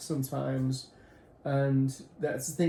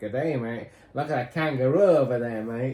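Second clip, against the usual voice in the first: over-the-top, exaggerated Australian accent; 4 dB louder than usual. Explaining that people mistake the speaker's accent for Australian: exaggerated Australian accent. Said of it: "Some people think it's Australian. Like".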